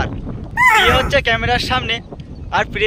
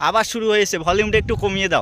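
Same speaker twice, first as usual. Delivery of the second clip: ordinary talk, nothing marked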